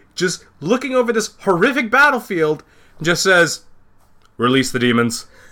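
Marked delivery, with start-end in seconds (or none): 4.3-5.2 mock casual, unbothered, nonchalant, offhand delivery. Retelling a general's order over a battlefield: imitating a nonchalant general. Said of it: "very, very nonchalantly".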